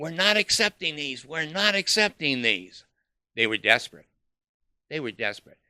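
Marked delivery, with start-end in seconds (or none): 0.0-2.8 put-on loud, high, obnoxious yelling. Retelling how a man chased them out of the building, imitating him yelling.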